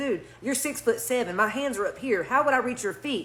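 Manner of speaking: plain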